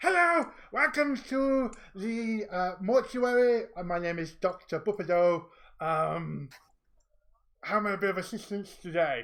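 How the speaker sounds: loud, slow welcoming voice. Voicing an NPC who greets the players at the mortuary: Doctor Bupido voice. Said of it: "greet you all with".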